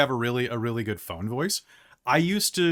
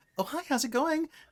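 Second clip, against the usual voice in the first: very high, soft customer-service phone voice; 12 semitones higher, 6 dB quieter than usual. Speaker mimics the listener answering calls at work, customer service voice. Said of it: "you got your customer service voice down".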